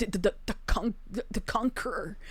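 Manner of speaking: hushed, breathy, whispered stammering repetition. Retelling what she said in that moment, stuttering. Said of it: "she stutters in that moment".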